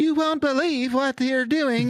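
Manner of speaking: very high, synthetic AI announcer voice. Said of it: "hellscape of A I voices".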